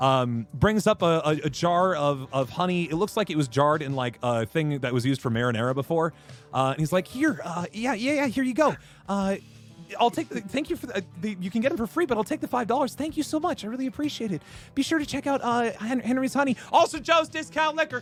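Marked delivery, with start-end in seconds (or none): 7.1-18.0 put-on jittery, nervous, excited, eager rush, young, pitched up. Voicing a nervous young kid handing over a jar of honey: scared, nervous but excited kid. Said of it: "kinda scared, uh, but a little nervous, but kind of excited".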